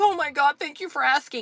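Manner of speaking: put-on choked-up, high, tearful, grateful voice. Recounting asking someone about her hard day, imitating someone crying. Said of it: "I had someone cry the other day".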